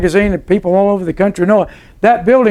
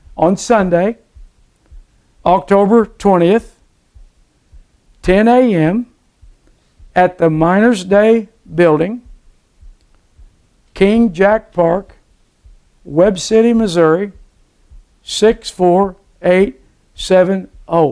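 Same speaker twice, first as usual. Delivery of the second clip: speaking slowly. Announcing the service time and place for listeners, talking slow. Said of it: "I'll go talk slow".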